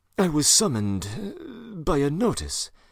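hesitant, halting. A man answers a clerk's shouted question, faltering. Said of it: "Raskolnikov faltered".

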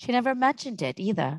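ordinary delivery

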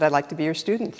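ordinary delivery

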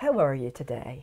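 Devon accent, pitched low. Speaker compares Somerset, Devon and Norfolk accents, demonstrating a flat Devon accent. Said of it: "In Devon".

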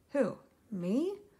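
stammering, stuttering delivery. Ariel asks Flounder a question and he answers, stuttering. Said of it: "Flounder stuttered".

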